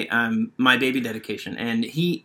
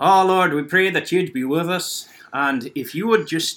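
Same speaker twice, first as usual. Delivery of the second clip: put-on heavy, thick Scottish accent throughout; 5 semitones higher than usual. Retelling a grandfather reading a prayer at a baby dedication: Grandpa Angus's thick Scottish accent. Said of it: "he's a thick Scottish accent reading the whole thing".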